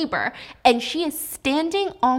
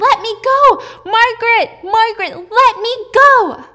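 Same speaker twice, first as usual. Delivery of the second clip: long, piercing, very high, very loud screams; 11 semitones higher, 10 dB louder than usual. Retelling a character being dragged away, imitating someone screaming. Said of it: "she's screaming".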